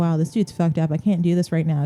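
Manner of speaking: usual speaking voice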